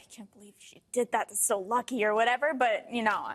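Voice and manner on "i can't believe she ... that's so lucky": grumbled, muttered under the breath to oneself. Retelling what one says after the other player gets the point: imitating muttering under breath. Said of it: "under my breath, I'm like".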